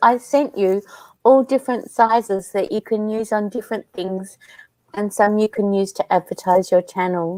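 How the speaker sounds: ordinary talk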